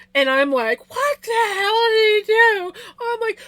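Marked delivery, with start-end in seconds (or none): 0.9-2.7 mock tearful, snotty ugly crying, very high sobbing wail. Retelling reading a surprise note: imitating own tearful crying. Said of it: "I am ugly snot crying".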